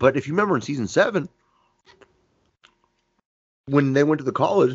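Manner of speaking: talking with mouth full, chewing candy. Speaker keeps talking with a starburst in the mouth, mouth full, chewing. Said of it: "I just have this starburst in my mouth".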